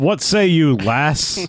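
put-on broadest over-the-top American accent, very slow, drawn out. Imitating a movie character calling someone lass: over-the-top american accent. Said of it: "in the most American accent possible".

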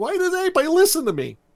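mock, shrill, very high-pitched screaming. Retelling a cartoon fight scene: imitating someone yelling. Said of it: "yelling and screaming".

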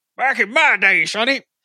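put-on old-timer voice, pitched high. Speaker discussing how programming changed since the 90s, in a put-on old-timer voice. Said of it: "you mention it with that particular voice".

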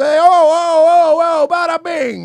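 heated Italian arguing, high-pitched and loud. Acting out an argument during an interview: imitating an italian arguing. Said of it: "an Italian arguing".

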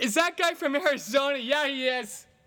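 put-on high, loud, drunken yelling. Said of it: "just yelling stuff out".

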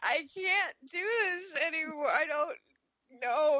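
play-acted, high, tearful, weepy sobbing voice. Retelling daily tears during maternity time: imitating own past crying. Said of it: "I would just be crying and being like".

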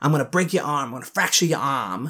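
put-on threatening Boston accent on "arm". Retelling how he threatened Derek, deliver his words in a Boston accent. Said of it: "that's like a Boston accent".

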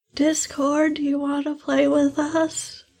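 hushed voice. Whispering to a small figurine in the game: whispering. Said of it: "I'm going to whisper Discord into the mini".

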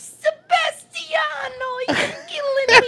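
put-on very high, loud old Italian grandma voice. Telling a story about his grandmother, he quotes her in an impression of his Italian grandma. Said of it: "you have to do the grandma's impression".

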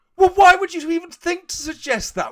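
mock outrage, high and loud.

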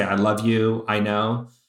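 usual speaking voice

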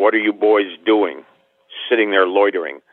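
stern, scolding delivery. Retelling how a man pulled over and questioned boys on a curb: imitating a stern question. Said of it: "he looks down at us real sternly".

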